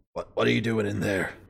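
very grumbly, rough, creaky voice. Narrating a scene as footsteps approach, a voice speaks in a very grumbling voice. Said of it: "in a very grumbling voice".

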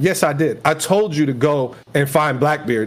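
ordinary talk

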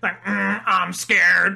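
rough, creaky voice-box voice. Recalling a line from South Park, speaker quotes it in a Ned from South Park voice. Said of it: "for a line that Ned said, ... just voices like".

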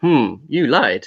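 put-on flat robotic monotone. One speaker mimics how Elon Musk talks to the other: robotic Elon Musk impression. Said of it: "he kind of does talk a bit like a robot".

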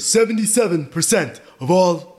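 husky, mock elderly man voice. Showing another speaker a huskier Bernie voice. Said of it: "It's a little bit huskier".

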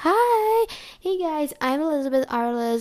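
performed show voice, projected. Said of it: "That's my impression voice".

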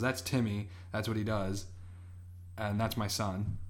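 ordinary delivery

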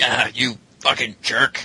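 fake, pretend angry tone. Asked by another speaker to yell at Andrew, doing so: mock yelling at someone. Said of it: "that's your cue to yell at".

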